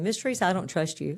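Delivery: ordinary talk, nothing marked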